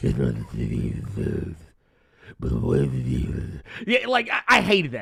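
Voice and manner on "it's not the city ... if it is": very low, gravelly growling voice. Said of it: "he's not using the Ba-, the Bale".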